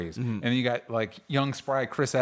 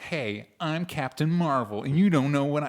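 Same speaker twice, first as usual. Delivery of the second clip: put-on middle-schooler voice, higher; 3 semitones higher than usual. Mocking the Captain Marvel voiceover: imitating Brie Larson as a middle schooler. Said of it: "it sounds like a middle schooler".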